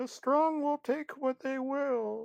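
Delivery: very high, soft, put-on girly feminine voice. Retelling what a man said in a story, high-pitched fake feminine voice. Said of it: "he said in some sort of like high pitched fake feminine voice".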